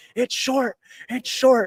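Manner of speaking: put-on very high, thrilled, excited yelp. Retelling a documentary scene of a win, imitating someone yelling. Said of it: "he's yelling".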